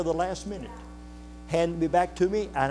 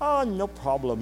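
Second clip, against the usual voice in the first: put-on German accent, higher pitch; 2 semitones higher than usual. Retelling what a German man said in reply, in a German accent. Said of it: "in his German accent".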